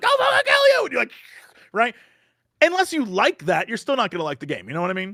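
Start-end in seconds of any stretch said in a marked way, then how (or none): 0.0-0.8 mock very high, loud anime-style scream. Describing a dogfighting game, speaker mimics its voice actors: screaming anime voice. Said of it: "anime voice actors screaming at you".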